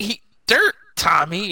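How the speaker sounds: high-pitched delivery. Retelling a film scene where the doll buries Tommy: imitating Chucky. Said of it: "Chucky's just like".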